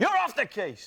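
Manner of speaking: shouty, yelling voice. Acting the police boss firing a detective: shouty police boss shouting. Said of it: "he always goes like this".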